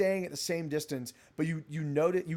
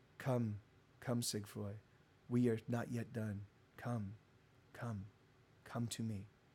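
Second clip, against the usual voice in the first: low, gender-ambiguous voice, quieter and slower; 5 semitones lower, 9 dB quieter than usual. Describing a voice they heard, the speaker imitates it in a low-register voice. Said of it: "It is kind of lower register".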